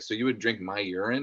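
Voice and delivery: normal talking voice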